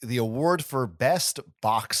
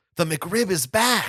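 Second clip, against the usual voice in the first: mock awestruck, thrilled, excited, high, drawn out; 7 semitones higher than usual. Retelling a car ride passing a McDonald's: imitating Jack Osbourne, excited. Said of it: "He's just so excited".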